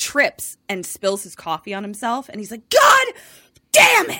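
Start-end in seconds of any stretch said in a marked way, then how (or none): 2.7-4.2 put-on very high, very loud, shrill angry outburst. Retelling how someone spilled coffee on himself: imitating someone getting mad. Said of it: "gets really very mad".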